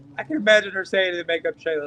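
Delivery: ordinary talk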